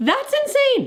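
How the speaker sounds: very high-pitched shriek of excitement.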